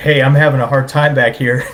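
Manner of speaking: mock wimpy, timid, meek pleading tone. Retelling calling the pilot from the back seat while airsick: imitating own timid wuss tone. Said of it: "the biggest wuss tone that has ever come out of my mouth".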